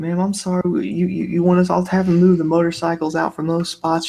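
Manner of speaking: gentle, soothing voice. Retelling a motorcycle parking standoff, the speaker quotes one of their guys calming a woman; retelling a calming apology. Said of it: "he was trying to calm her down".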